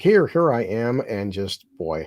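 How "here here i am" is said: play-acted, very slow, stretched-out, desperate delivery. Recapping a story, the speaker quotes Hugh proving his worth, imitating Hugh screaming. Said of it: "he's screaming like".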